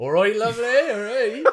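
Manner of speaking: Cornish-accented speech. Answering a request to do an accent: Cornish accent. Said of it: "Do a Cornish accent".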